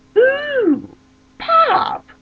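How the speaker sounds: very high, loud, delighted squeal. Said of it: "I'm like".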